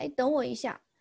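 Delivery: ordinary talk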